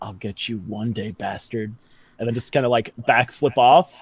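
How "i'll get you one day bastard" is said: secretive half-whisper, close to the ear. Player getting close to a bucking creature's ear before backflipping off: half-whispering. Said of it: "get real close to its ear and whisper".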